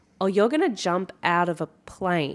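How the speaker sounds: normal talking voice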